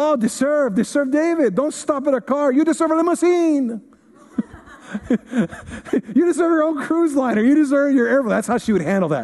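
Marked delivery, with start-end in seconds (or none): 0.0-8.3 put-on slight, pitched-up Spanish accent. Recounting asking mom for a car at sixteen: imitating mom's Spanish accent. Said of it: "her little Spanish accents".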